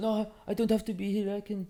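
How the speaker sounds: put-on French accent. Quoting a man's reply during a studio session; french accent.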